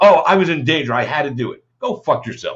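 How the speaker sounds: mock-sarcastic tone. Acting out a statement that was read in print, retelling a sarcastic reply. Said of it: "That is the most sarcastic".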